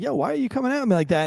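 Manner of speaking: high, street-tough Los Angeles gangster attitude. Retelling what a woman in a clip is saying: imitating a woman's street attitude. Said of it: "she's saying, like".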